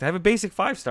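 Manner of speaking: excited, voice cracking. Showing viewers the results of a crystal opening; excited, voice cracking. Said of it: "I'm so excited my voice is cracking".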